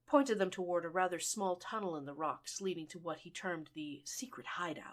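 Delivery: ordinary delivery, nothing marked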